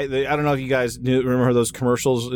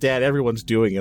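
usual speaking voice

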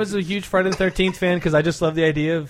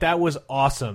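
normal talking voice

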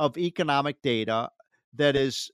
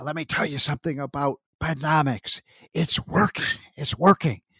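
voiced stage whisper, last line rising. Quoting the president's speech on the economy: whispering like Joe Biden. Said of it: "He whispers and he said".

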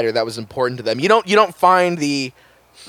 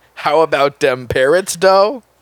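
put-on ringtone-style voice; 3 semitones higher than usual. Quoting another speaker's recorded ringtone back to them: imitating a silly ringtone voice. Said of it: "a recording of you saying".

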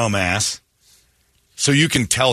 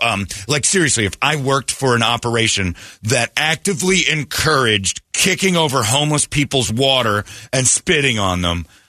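usual speaking voice

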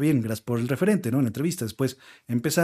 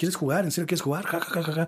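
play-acted high possessed-girl voice, jeering, then cackling; 5 semitones higher than usual. Retelling a possessed girl yelling at the psychic: imitating a possessed girl yelling. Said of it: "Le empieza a gritar".

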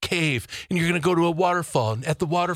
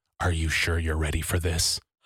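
put-on whisper, lower pitch; 12 semitones lower than usual. Retelling how someone leaned down to the ear: imitating a whisper. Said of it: "lean down and whisper into my ear".

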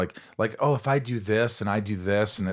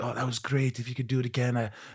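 put-on voice slipping into a French accent; 5 dB quieter than usual. Retelling what a film director said after a scene, accidental French accent. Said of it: "I sounded French".

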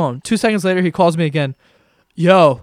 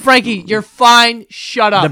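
mock screaming; 5 semitones higher, 3 dB louder than usual. Recalling a friend's mom screaming at him in her car, imitating a mom screaming. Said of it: "she was screaming at you".

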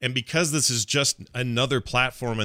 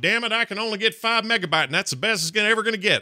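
put-on rural Kansas accent, very high pitched; 10 semitones higher than usual. Imitating a hypothetical gamer in Kansas with slow internet: rural Kansas accent. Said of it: "I'm trying not to make fun of his accent".

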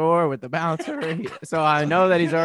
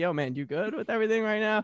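hushed, close half-whisper, pitched up; 6 semitones higher, 5 dB quieter than usual. Retelling checking in on a friend at a party: retelling a half-whisper. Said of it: "whisper his ear".

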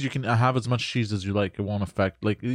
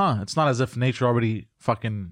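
ordinary talk, nothing marked

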